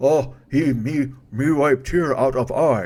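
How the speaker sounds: very slow monster voice, every word dragged out. Speaker repeating their own odd phrasing in a voice: Frankenstein voice. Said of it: "almost like a Frankenstein voice".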